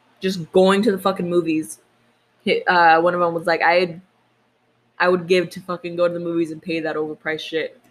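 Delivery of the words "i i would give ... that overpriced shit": ordinary talk, nothing marked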